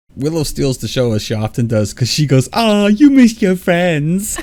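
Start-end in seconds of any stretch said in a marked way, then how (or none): 2.6-4.4 very high, loud, slow, stretched-out silly voice. Recapping a TV episode, quoting Willow's line in Willow's funny voice. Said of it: "She uses this funny voice when she says it".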